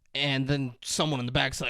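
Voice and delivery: ordinary talk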